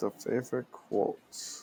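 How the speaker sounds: breathy, close whispered delivery. Repeating a question about a favorite movie quote: Hannibal Lecter voice. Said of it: "that was him doing his Hannibal Lecter impression".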